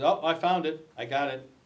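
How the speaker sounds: usual speaking voice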